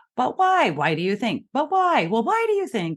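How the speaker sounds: playful, almost sing-song teasing. Showing how to answer someone's repeated question, in a playful tone. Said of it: "change the tone of your voice... almost playfully".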